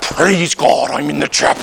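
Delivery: affected, put-on English accent. Mocking people who suddenly change once inside the chapel, in a put-on english accent. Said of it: "all of a sudden everybody's got an English accent".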